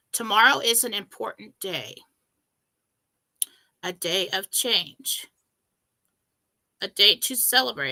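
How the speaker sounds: tearful, voice cracking. Speaking to listeners about tomorrow's day of change, crying, voice breaking. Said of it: "I'm crying now".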